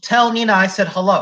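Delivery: ordinary delivery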